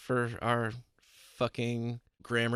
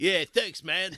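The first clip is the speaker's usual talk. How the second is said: fake vague European accent, pitched up, tossed off; 7 semitones higher, 4 dB louder than usual. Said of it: "in a fake European accent".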